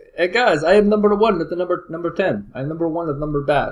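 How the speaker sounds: put-on Eastern European accent, pitched high. Imagining someone bragging to friends, in an Eastern European accent. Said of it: "in that East Eastern European accent".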